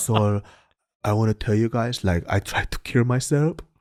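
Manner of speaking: put-on thick Korean accent. Retelling a guy's testimony in a group: imitating a thick Korean accent. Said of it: "he has a thick Korean accent".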